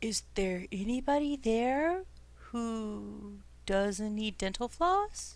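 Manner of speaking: barely audible, very slow, hushed voice. Voicing Tyler calling out in a cave to anyone there: speaking quietly. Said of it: "Tyler's speaking l-, quietly".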